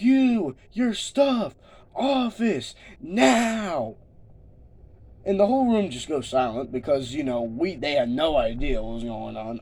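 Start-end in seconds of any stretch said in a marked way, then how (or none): 0.0-4.0 put-on shout, much higher and slower. Retelling how someone started yelling at the room, retelling someone yelling. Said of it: "starts yelling".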